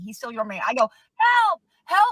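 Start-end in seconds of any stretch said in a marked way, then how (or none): 1.2-2.1 shrill, very high, loud scream. Retelling screaming to the neighbors for help: retelling screaming for help. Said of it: "I'm gonna start screaming".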